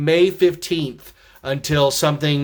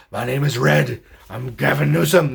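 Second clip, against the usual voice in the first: rough, creaky put-on character voice; 2 semitones lower than usual. Comparing the governor's voice to Red from the Tube Bar: Red from the Tube Bar voice. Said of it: "ours sounds like Red from the Tube Bar".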